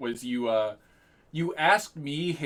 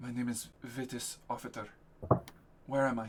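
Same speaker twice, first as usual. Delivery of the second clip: put-on softly spoken Roman accent; 8 dB quieter than usual. Speaker voicing a character he plays, in Vitis Offertor's Roman accent. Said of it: "your um Roman accent a lot better".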